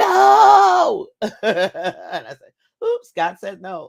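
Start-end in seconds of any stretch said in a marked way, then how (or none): 0.0-1.1 very loud, very high, rough yell, "no" drawn out. Retelling how a man yelled his answer: retelling a yell. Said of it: "he yelled it".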